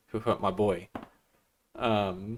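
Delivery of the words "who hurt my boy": put-on accent wavering between American and British, quieter. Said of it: "that's what he fucking sounds like".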